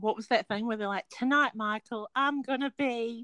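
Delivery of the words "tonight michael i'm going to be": sad, slow, high British mum voice and accent. Recalling a TV show's catchphrase to a co-host: sad British mum accent. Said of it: "I just realised that was an accent".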